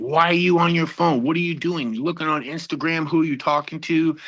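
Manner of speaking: mock-angry, acted-out raging outburst. Retelling the moment at the gas station when she was on her phone: retelling an angry outburst. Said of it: "I just had this rage come over me".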